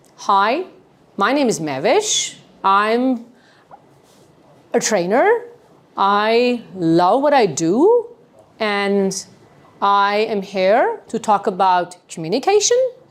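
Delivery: every sentence ending with an upward, question-like rise. A trainer demonstrating a self-introduction, with rising tone at sentence ends. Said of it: "All of my sentences are ending at a higher tone".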